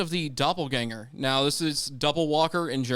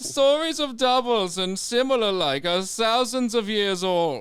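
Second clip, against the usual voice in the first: bad put-on German accent, higher; 6 semitones higher than usual. Asked to hear the german accent, the speaker puts on a bad german accent. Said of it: "I know it's an awful accent".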